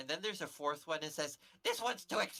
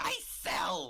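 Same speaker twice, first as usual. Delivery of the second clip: tiny, little goblin creature voice; 4 dB louder than usual. Voicing a tiny goblin asking the travelers for money: tiny goblin voice. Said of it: "this tiny goblin comes up towards you".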